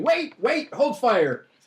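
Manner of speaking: very high squeaky female gnome. Narrator voicing a gnome calling for attackers to stop, squeaky she-gnome voice. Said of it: "you hear one squeaky she-gnome's voice going".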